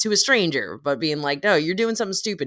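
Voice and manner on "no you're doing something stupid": put-on yell, higher pitch. Retelling how people yell at a stranger on the street: imitating someone yelling. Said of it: "I've heard people yell at".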